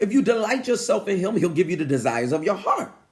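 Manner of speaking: plain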